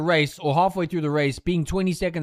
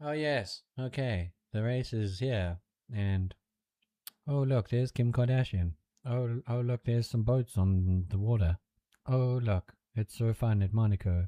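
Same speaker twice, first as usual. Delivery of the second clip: put-on hushed, low, murmured British TV commentator accent; 6 semitones lower, 9 dB quieter than usual. Describing the British commentators on TV at the Monaco race, mock British commentator accent. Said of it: "the British commentators are like".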